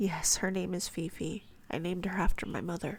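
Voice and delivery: ordinary delivery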